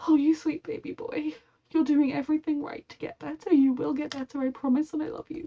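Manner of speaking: near tears. Reacting to a show about Charlie asking for help: emotional, close to tears. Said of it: "I just am really emotional".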